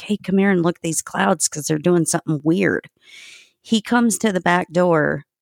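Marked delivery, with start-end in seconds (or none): none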